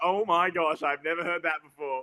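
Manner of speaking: usual speaking voice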